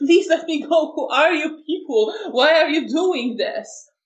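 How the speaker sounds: high, crying, sobbing, shocked pleading. Voicing a man in shock who begs to be released: crying in shock, pleading. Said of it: "completely in shock and crying and just saying".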